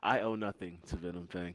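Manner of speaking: whispered in character voice. Whispering back in character to a companion: whispering back in character. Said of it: "I whisper back".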